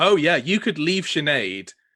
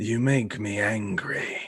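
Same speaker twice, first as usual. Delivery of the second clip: put-on demon voice, lower; 4 semitones lower, 3 dB quieter than usual. Voicing the floating demon Harborim as he faces Rumpet: demon voice. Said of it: "he looks down at you and says".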